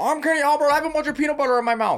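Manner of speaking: very high, loud voice sounding as if underwater. Joining in on an impression: Kenny Albert impression, sounding underwater. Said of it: "It sounds like he's underwater".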